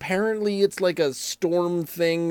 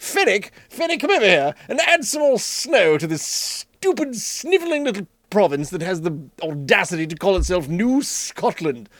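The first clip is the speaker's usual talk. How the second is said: British army general voice; 2 semitones higher than usual. Voicing the weather giving orders, the speaker uses a british general voice. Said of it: "I can imagine he's a British general".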